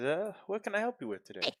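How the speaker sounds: very high, bright, cheerful and friendly voice. Voicing the Burgomaster greeting visitors at his door: cheerful Burgomaster Dimitri voice. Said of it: "He says".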